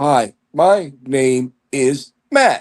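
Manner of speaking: put-on talking toy voice, very slow. Mocking someone as if they learned to talk on a Speak & Spell. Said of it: "you learn how to talk on a speak and spell?".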